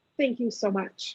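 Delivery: tearful voice, crying while talking. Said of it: "now I'm crying".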